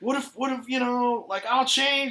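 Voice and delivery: mock, high, pleading, begging tone. Retelling what a dude said after being turned down, imitating someone begging. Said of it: "kinda begging".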